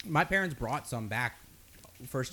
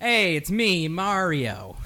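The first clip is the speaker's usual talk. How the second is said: booming, drawn-out, big and slow game-hero voice; 3 semitones higher, 8 dB louder than usual. Showing the others a Mario impression. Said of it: "here's my Mario".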